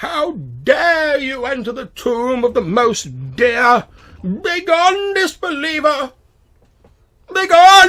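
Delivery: very high, very loud, shrill, self-righteous outcry. Narrating the tomb scene, the speaker voices the voice that speaks: shrill, sanctimonious voice. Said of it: "a shrill, sanctimonious voice says".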